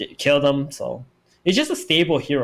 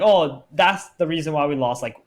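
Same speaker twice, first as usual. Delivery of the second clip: normal talking voice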